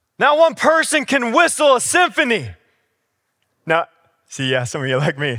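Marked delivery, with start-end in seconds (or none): 0.2-2.5 put-on coach barking, very high and loud. Retelling a coach's words during a punishing practice: imitating the coach yelling. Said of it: "Then he'd yell this one".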